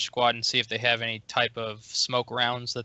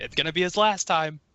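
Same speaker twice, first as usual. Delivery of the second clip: pitched-up line, called out loudly; 5 semitones higher than usual. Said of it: "I'm gonna yell out".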